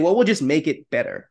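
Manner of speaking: normal talking voice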